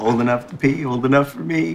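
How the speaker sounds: put-on exaggerated, crude, facetious voice. Joking facetiously with a co-host, the speaker puts on an exaggerated facetious voice. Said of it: "If you couldn't tell by our exaggerated voices".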